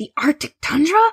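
completely incredulous tone. A man stares at a map the talking car dropped at his feet: complete disbelief. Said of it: "He said in complete disbelief".

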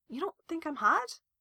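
tiny, shrunken, very small, high voice. [name] asks Joe, right after Joe denies having a crush on him, in a very small voice. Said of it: "his voice coming out very small".

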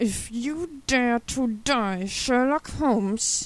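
loud, very slow, drawn-out growl through gritted teeth. Narrator reads a man's line to a gravely injured detective, growled through gritted teeth. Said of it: "he growled out through gritted teeth".

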